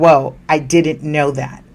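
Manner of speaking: plain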